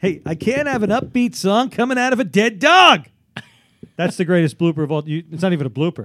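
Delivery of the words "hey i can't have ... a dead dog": put-on radio host losing it, loud and raised. Retelling a radio tape where the host gets upset: imitating Casey Kasem getting upset. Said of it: "where Casey Kasem gets upset".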